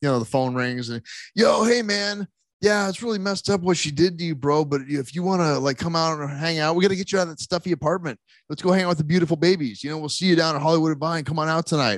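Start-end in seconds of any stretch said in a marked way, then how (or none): 1.3-12.0 smooth party-guy bro voice. Retelling a pre-recorded phone call from a band's show: imitating a Swingers-style phone call dude. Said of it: "it kinda sounds like it's out of Swingers".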